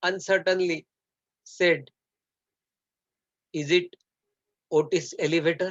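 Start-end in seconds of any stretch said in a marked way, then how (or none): none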